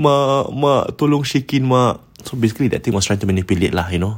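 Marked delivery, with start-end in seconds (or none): 0.0-2.0 high, slow, sorrowful calling out. Retelling a scary story, voicing the thing calling to the mother: imitating a sad voice. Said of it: "call out her mom in a sad voice".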